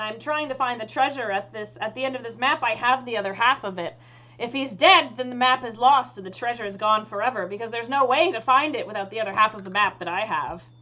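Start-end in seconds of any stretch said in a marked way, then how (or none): none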